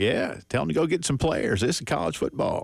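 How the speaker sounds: put-on Georgia accent with a Southern twang. Retelling a coach's answer about advice for a new head coach: imitating Dan Reeves's Georgia accent. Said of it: "that Georgia accent of his".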